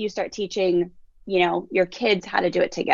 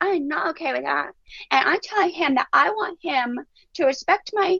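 put-on tiny little three-year-old toddler voice; 8 semitones higher than usual. Retelling a three-year-old stating her feelings, in a little three-year-old voice. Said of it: "like all in this little three year old voice".

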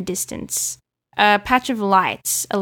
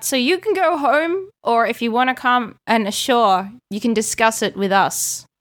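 mild, called-out voice; 3 semitones higher than usual. Voicing a figure who calls out to come ashore and talk: yelling out to someone. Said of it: "And he yells out".

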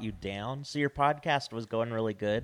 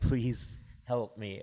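put-on, pretend pleading voice. Joking that the guest is being held, imitating Travis, mock plea for help. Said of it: "he's like".

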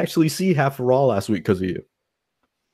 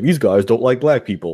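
ordinary talk

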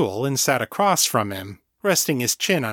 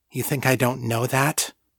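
ordinary delivery

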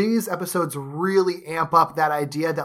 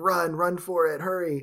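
slow, hushed, dramatic half-whisper; 4 dB quieter than usual. Retelling a dramatic scene: imitating a half-whisper. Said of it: "whispering to him".

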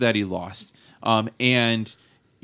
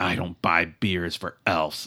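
put-on low, scornful, contemptuous voice; 6 semitones lower, 4 dB quieter than usual. Voicing the NPC answering that he owes the elf a beer. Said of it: "He spits".

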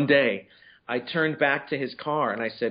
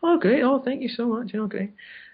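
put-on shrill Scottish accent, very high-pitched; 11 semitones higher than usual. Retelling how a man replied when you shook his hand and thanked him, in a really high Scottish voice. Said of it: "really high Scottish".

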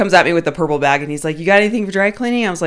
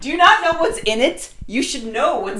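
put-on, mad, pitched-up angry outburst; 8 semitones higher than usual. Speaker retells getting all mad at someone: mock-mad, retelling anger. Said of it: "And I got all mad".

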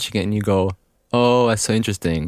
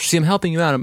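put-on voice, much higher pitch; 7 semitones higher than usual. Teasing the other speaker, who worries about their voice, in a put-on higher voice. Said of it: "I'm putting a higher voice".

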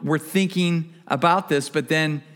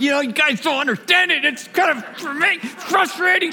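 put-on frustrated, angry outburst, voice very high; 12 semitones higher than usual. Retelling sharing with some guys about launching a church: reenacting an angry raised voice. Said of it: "the more I was raising my voice, and I was like really getting angry".

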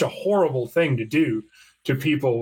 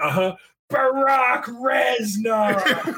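put-on drunk man voice, higher; 10 semitones higher than usual. Retelling what a very drunk friend kept saying: imitating a drunk man. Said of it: "He got so drunk".

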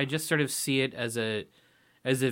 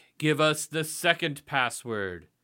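put-on voice of an old man; 2 semitones higher than usual. Retelling a movie scene: imitating the old man in the red robe. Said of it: "the dude is like".

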